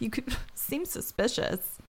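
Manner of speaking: mock breathy, half-whispered scoffing laugh. Retelling a character's reply from a scene: imitating a scoffing laugh. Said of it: "He kinda scoff laughs".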